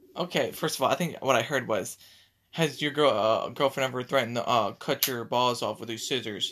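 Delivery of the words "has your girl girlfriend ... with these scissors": ordinary delivery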